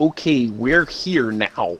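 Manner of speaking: loud, slow, very drawn-out put-on American accent. Joking around, saying they have arrived: put-on American accent. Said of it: "That's my American accent".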